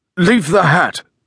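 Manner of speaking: muffled, indistinct. The visitor speaks to the woman handling his things, in a muffled voice. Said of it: "in a muffled voice".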